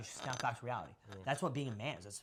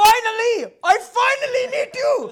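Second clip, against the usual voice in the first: very high, very loud, slow, put-on Indian accent; 21 dB louder than usual. Retelling a stranger who came up to him thursday night, put-on indian accent. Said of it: "And like Indian accent".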